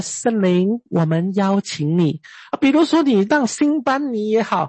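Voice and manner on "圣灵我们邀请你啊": light, soft, tender, gentle speaking. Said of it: "他只是轻轻的".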